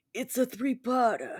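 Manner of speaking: Italian mob boss delivery. Retelling a joke line in an Italian mob boss voice. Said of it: "like an Italian mob boss".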